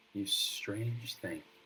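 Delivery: quiet whispering. Playing a character who whispers to a strange wooden statue: whispering. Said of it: "sort of whispers to it".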